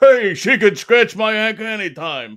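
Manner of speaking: put-on punched-out delivery like an old-school comic. Joking about a woman who has just joined you backstage, do a Rodney Dangerfield impression. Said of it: "that's a good impression".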